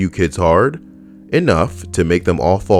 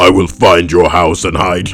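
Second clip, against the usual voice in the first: wild, crazy, deep put-on voice, loud; 5 dB louder than usual. Speaker retells what someone turned and said to him, in a crazy deep voice. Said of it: "in a crazy deep voice says".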